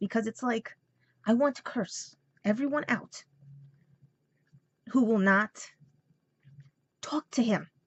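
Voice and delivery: tearful, frustrated voice, crying while talking. Explaining a frustrating situation while upset, tearful and frustrated. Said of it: "That's why you see the tears coming out of my eyes".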